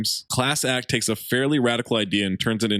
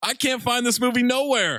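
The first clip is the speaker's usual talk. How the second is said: put-on excited voice, very high; 12 semitones higher than usual. Reading a five-star viewer review aloud: put-on excited voice. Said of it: "What was that voice?".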